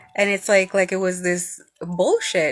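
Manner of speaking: ordinary talk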